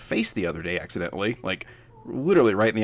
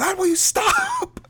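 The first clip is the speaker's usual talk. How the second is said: mock very high, stretched, drawn-out shrieking scream; 4 dB louder than usual. Retelling a noisy scene at home: imitating someone screaming. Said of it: "as they're screaming at my wife".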